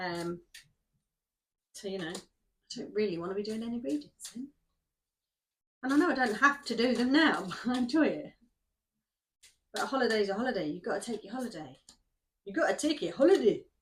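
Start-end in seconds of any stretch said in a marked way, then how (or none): 12.4-13.6 suddenly slipping into a Scottish accent. Talking about upcoming plans, repeating a remark in a scottish accent. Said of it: "I don't know why I said that in Scottish accent".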